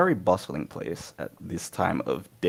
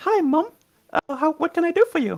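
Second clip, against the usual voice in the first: put-on small child voice, higher and louder; 5 dB louder than usual. Voicing a small child greeting a stranger: Oliver Twist voice. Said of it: "that is my little, um, Oliver Twist voice".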